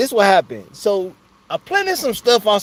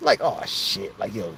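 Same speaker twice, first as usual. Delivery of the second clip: usual speaking voice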